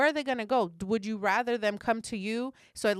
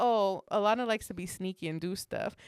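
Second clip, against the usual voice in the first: normal talking voice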